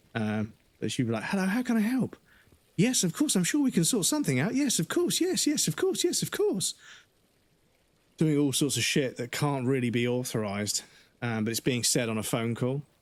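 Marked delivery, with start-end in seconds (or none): 1.2-6.7 very high, bend-over-backwards eager-to-please service voice. Complaining about a manager on customer calls, the speaker mimics her: imitating an overly accommodating manager. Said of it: "bend over backwards for the customer".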